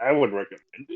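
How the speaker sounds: words pushed out while choking on water. A podcast guest, asked if he recommends the book, answers while choking on water. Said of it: "Sorry, I'm choking on water".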